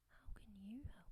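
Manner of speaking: sneering, scornful, contemptuous tone. The narrator reads the cat's reply to the mouse, sneering. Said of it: "sneered the cat".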